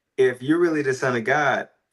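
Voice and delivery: ordinary talk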